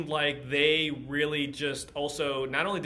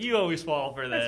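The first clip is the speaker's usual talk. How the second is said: mock-tickled, put-on amused delight. Recapping a scene with a friend, the speaker retells a character's line, mock-tickled amused tone. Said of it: "he's like tickled by it way".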